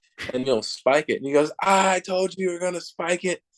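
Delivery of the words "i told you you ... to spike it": put-on high heckling yell across a distance. Retelling how a fan behind home plate heckles the pitcher: imitating a fan yelling. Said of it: "he's just yelling at you the whole time".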